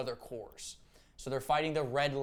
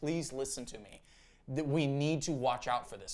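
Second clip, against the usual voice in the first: put-on pleading voice. Retelling a movie scene, Kilowog begging the Guardians: imitating Kilowog pleading. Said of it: "pleading with them".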